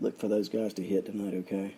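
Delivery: deep, low, very quiet half-whisper. Previewing tonight's baseball game and tipping hitters to watch, half-whispering. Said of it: "I'm whispering".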